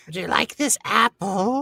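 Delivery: squeaked-out storybook witch voice, very high and loud.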